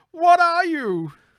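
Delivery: shrill, whiny crook voice, very high, very loud. Acting out a frightened criminal's line as an impression during a story, in an imitated whiny thug voice. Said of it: "Here's my Batman voice".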